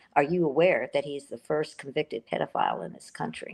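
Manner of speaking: plain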